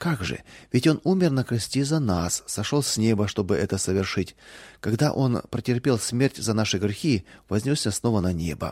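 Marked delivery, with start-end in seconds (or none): none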